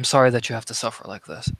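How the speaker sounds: very softly spoken. In a role-play scene, speaking to a suffering character, very softly spoken. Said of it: "you just say very softly".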